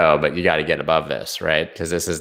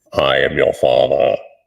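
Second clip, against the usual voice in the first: loud, raised, rough villain voice; 3 semitones lower, 5 dB louder than usual. Doing a Darth Vader voice during a chart talk. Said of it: "Did that sound like Darth Vader?".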